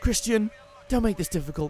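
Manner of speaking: high, mock racy tone. Repeating own line as if in Fifty Shades of Grey: Fifty Shades of Grey voice. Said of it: "I sound like I'm in Fifty Shades of Grey".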